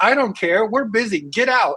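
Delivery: woman's high voice, yelling right in your face. Retelling a woman telling him to leave: imitating a woman yelling. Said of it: "she's, like, yelling at me".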